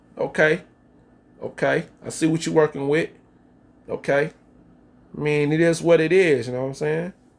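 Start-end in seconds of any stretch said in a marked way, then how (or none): none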